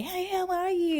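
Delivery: very high, put-on friendly, fake-nice voice. Mocking customer service workers greeting a customer, in a put-on high-pitched fake-nice voice. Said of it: "they put on the high-pitched voice".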